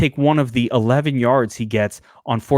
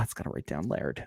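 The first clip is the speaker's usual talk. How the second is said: whispered, lispy, little put-on voice; 7 semitones lower, 15 dB quieter than usual. Showing the voice in their head while writing things down: little lispy head voice. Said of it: "that's my head voice".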